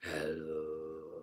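very low, soft demonic broken toy voice. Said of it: "it sounded demonic".

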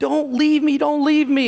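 very high, terrified, panicked, pleading scream. Retelling how a young girl screamed at them: imitating a panicked scream. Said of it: "She is screaming in complete panic and shock".

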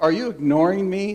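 acted-out, slighted, mildly irritated grandpa voice. Retelling a grandfather asking the grandson a question: imitating voice getting a little louder. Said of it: "The volume of his voice amping up".

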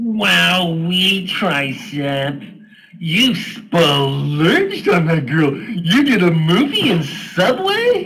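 put-on high, loud sock puppet voice. The puppet reacts to Tricep taking a girl to Subway; sock puppet voice.

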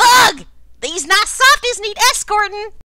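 very loud, very high, shrill shouting. Narrating a scene, creatures in a rush address the group: shouty. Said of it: "they get shouty again".

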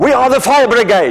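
play-acted high-pitched shouting. Retelling how a firefighter at the door yelled: imitating a firefighter yelling. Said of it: "the guy yelled into my face".

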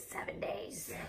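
eerie, creepy put-on whisper. Noting something must be used within seven days of opening, creepy voice. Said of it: "You got to say it in this creepy voice".

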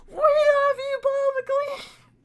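piercing, very high, shrill scream. Retelling how a woman broke in at a press conference: imitating a woman screaming. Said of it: "just screams".

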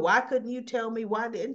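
ordinary talk

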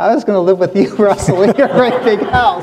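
high, loud, snarky, teasing sarcasm, acted out. Retelling what Beck Chom answered when asked about being displaced, imitating Beck Chom's sarcasm. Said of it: "he's being all snarky and sarcastic".

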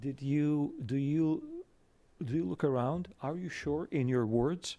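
stumbling, confiding, probing tone. Retelling how someone leaned forward and asked: imitating someone lowering his voice. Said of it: "he leaned forward and he lowered hi-, his, uh, voice and said".

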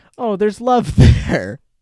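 high, loud mocking words with laughter. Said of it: "so bizarre to be like".

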